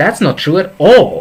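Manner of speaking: the word all hit hard, heavily stressed. Repeating a disagreement phrase, stress on all. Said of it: "The stress is on the all".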